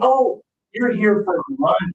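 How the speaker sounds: mock sudden realization, acted out. Retelling your own reply to a family at a restaurant, acting out sudden realization. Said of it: "And I say".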